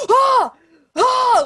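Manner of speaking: high, loud, thrilled, excited squeals and yelps. Describing a scene where a character sees an even larger worm, acting out excitement. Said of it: "Like just so excited".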